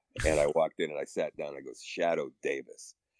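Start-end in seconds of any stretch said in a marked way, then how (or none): 1.8-3.0 confident, authoritative, commanding tone. Retelling walking in, sitting down and saying a name, with authority. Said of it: "I said it with authority".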